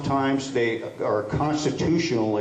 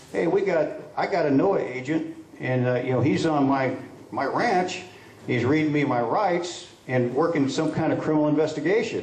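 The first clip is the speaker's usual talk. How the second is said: ordinary talk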